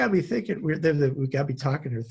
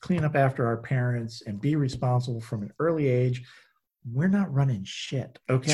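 usual speaking voice

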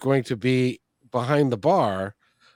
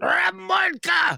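very loud shouting, much higher pitch. Retelling calling down the theater hallway to the stage, the speaker retells a loudest-voice shout. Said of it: "in my best, loudest voice".

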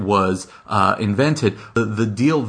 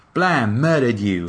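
in an English accent; 2 semitones higher than usual. Acting out a line as Rocket: English-accent Rocket voice. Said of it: "English, uh, accent Rocket saying".

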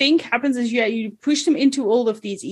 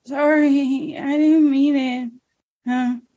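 muttering under the breath. Suggesting what a character could say in response to chat, muttering under his breath. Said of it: "he can just mutter under his breath".

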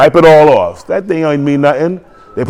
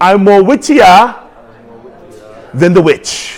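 imitated Nigerian accent; 4 semitones higher than usual. Leading the audience to repeat a quote together, in a Nigerian accent. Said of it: "Use your Nigerian accent".

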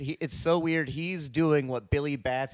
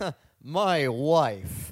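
bad, rough put-on comedy character voice; 4 dB louder than usual. Showing how to be Borat: Borat voice. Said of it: "to be Borat".

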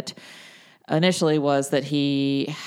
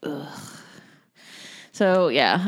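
reluctant, joyless, glum, unenthusiastic groan. Asked to report on the event just attended: glum, unenthusiastic. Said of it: "Don't sound so happy".

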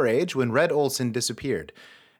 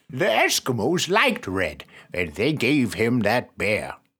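put-on deep, elderly old grandfather voice; 4 semitones lower than usual. Redoing a narrated line after a failed first try, in a grandfather voice. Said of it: "that's not a grandfather voice at all".

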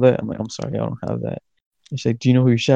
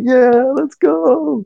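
put-on, very high, loud, hyped group screaming; 6 dB louder than usual. Retelling a ride as the theme kicked in: imitating a group screaming. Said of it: "we started screaming".

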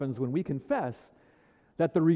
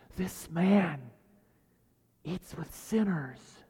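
sneering, superior, snide, condescending soft whisper; 5 dB quieter than usual. Quoting the Pharisees and scribes about Jesus, in a mock snide, condescending whisper. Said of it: "whispered, snidely, condescendingly".

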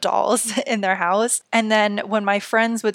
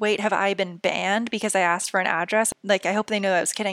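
ordinary delivery

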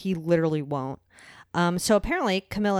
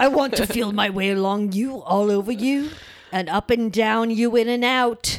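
put-on leering old British man voice, high and loud; 5 semitones higher, 6 dB louder than usual. Acting out a conversation, playing a horny old British man. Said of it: "imagine I'm like a horny old British man".

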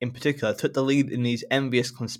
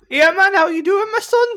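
shrill, booming, loud, high-pitched Geordie accent; 9 dB louder than usual. Asked to do it once more, speaker performs again in a geordie accent. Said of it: "this is Geordie".

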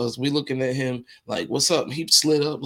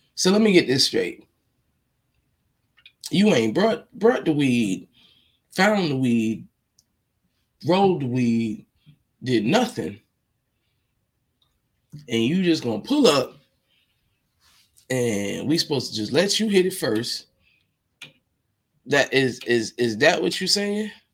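ordinary talk

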